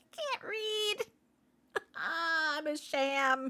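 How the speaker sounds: laughing hard. Reading out court records, the speaker is laughing hard. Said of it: "I'm laughing so fucking hard".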